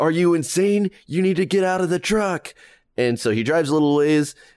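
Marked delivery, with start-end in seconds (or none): 0.0-2.5 high-pitched, full yelling. Telling a story about a truck at a gas pump, retelling Ben's yelling. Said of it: "Ben is completely yelling like".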